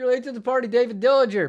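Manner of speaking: very loud, very high put-on Southern accent. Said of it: "Now I'm doing a Southern accent".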